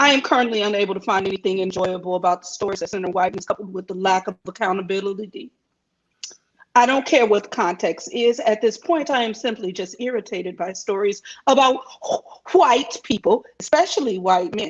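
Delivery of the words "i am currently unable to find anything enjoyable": usual speaking voice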